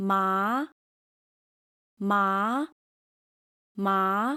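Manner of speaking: rising second tone, climbing low to high on 麻. Showing learners the second Mandarin tone to repeat: rising second tone. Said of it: "Your voice starts low and rises".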